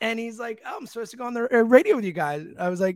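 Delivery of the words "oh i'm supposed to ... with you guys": quick, casually put-on Canadian accent. Retelling an exchange with a man booked for the radio show, imitating Rob Thompson's Canadian voice. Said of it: "in his Canadian voice".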